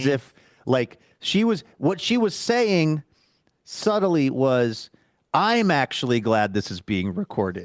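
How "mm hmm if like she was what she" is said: ordinary delivery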